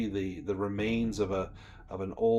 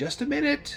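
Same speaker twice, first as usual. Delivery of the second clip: put-on very high, grandmotherly old-lady voice. Narrating a knock at a door; the woman inside answers in an old grandmotherly voice. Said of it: "it sounds like an old woman's voice".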